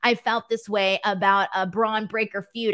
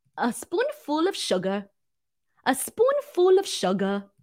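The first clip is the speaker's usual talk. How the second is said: terrible fake English accent, sing-song and slow; 4 semitones higher than usual. Reading viewer comments and attempting an accent, bad put-on accent. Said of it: "pretty sure that dec- that accent was a declaration of war".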